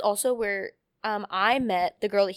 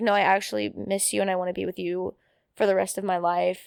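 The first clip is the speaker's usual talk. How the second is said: ordinary talk, nothing marked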